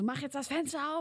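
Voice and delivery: high, aggressive, screamed yelling. Retelling how a man banged on the car window at midnight, retelling a man's scream. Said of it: "der ballert mir gegens Fenster und schreit".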